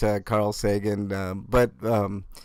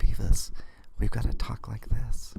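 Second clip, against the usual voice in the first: put-on whispered delivery. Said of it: "the whole whispering one".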